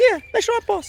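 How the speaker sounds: very high made-up character voice. Speaker shows the voice they used to give him, high-pitched voice. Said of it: "I used to give him a high voice like".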